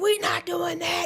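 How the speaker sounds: heated, angry, flat-out going-off voice. Retelling the sisters' reply on the phone: imitating sisters going off. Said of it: "they going off".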